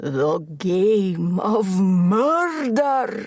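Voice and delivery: devil-like voice, the word "murder" drawn out. Reading a story where a character jokes about a guard's mistake: deep devilish voice. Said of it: "Angie said it in a deep, devilish voice".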